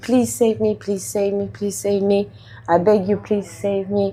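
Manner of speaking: put-on crying, acted-out tearful voice. Recalling his inner plea in the prasadam queue, retelling a crying plea. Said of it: "I was crying, I was screaming".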